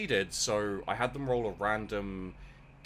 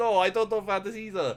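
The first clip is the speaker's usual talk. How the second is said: vague put-on Russian accent, higher; 11 semitones higher, 7 dB louder than usual. Retelling answering a scene partner who asks about vandis, vague russian accent. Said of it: "I put on a like vague Russian accent".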